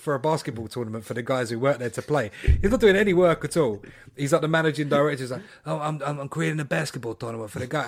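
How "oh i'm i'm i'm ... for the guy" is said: proud, stammering delivery. Retelling a TV scene about a basketball tournament: imitating Tony Soprano saying it proudly. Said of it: "he says it with such pride".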